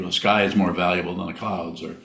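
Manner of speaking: ordinary talk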